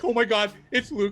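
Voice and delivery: mock tearing-up voice. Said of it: "tearing up".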